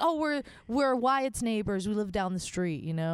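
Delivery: normal talking voice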